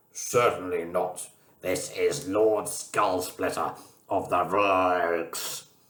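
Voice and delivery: imposing, slow, pompous alien voice, stretched words. Reading a story where the alien captain answers on the phone, alien voice. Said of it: "Stop fooling about doing alien voices".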